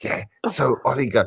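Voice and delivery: hushed, under-the-breath stage whisper. Teasing another speaker on the stream: imitating someone whispering. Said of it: "That's why you're whispering".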